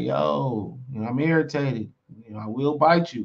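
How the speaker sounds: ordinary delivery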